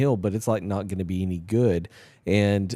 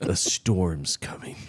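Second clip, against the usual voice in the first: deeper, superhero-style voice. After being teased about a line, the speaker redoes it in a deep Batman voice. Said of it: "Say with a deeper voice".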